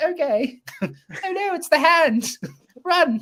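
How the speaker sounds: very high-pitched, very slow, drawn-out actress-like delivery. Retelling an actress's reaction in a movie: imitating Samantha Eggar. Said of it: "Samantha Eggar's just like".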